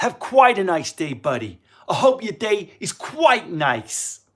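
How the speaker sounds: put-on loud, high New York accent. Retelling how someone in new york spoke to the speaker, new york accent. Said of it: "the New York accent".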